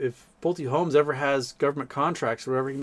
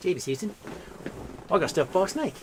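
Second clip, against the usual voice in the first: put-on Australian accent, pitched up; 5 semitones higher than usual. Reading the card's text aloud as expected, putting on an australian accent. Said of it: "read this in my Australian accent".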